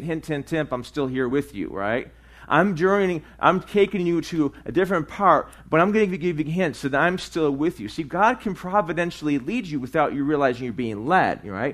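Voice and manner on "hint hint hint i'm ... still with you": ordinary talk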